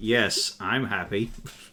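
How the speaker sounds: sarcastic voiced dog. Voicing a dog that comes when called but acts sarcastic: sarcastic dog voice. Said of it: "But he does it sarcastically".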